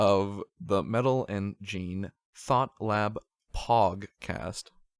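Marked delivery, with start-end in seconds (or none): 1.3-4.7 very slow, careful enunciation. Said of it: "I gotta say it slowly".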